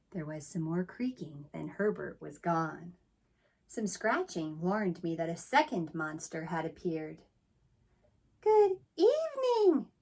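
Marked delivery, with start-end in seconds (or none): 8.4-9.8 very high, smooth, silken voice. A second monster arrives and greets the narrator in a high, silky voice. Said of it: "he said in a high, silky voice".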